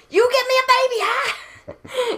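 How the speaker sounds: high-pitched, loud yelling.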